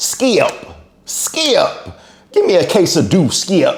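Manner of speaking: very high, swooping put-on voice with wide pitch swings. Doing an impression of Shannon Sharpe calling out to Skip. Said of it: "my best impression of Shannon Sharpe".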